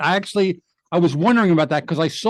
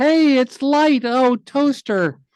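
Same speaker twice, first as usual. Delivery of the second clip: high, slow, drawn-out cartoon voice; 8 semitones higher than usual. Recalling the only voiceover role they ever got, the speaker demonstrates it: high Lampy voice. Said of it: "which I do a high version".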